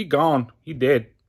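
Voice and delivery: put-on Mexican accent. Speaker criticizing a film's accents, quoting a scene, imitating a film's mexican accent. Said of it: "especially with the accent".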